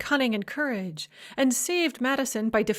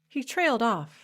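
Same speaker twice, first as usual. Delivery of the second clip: ordinary delivery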